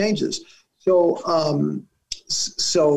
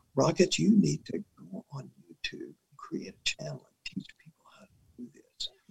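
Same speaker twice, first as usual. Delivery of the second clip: very quiet, hushed whisper; 9 dB quieter than usual. Retelling what a clinic worker said: imitating someone whispering. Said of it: "the guy whispered to me".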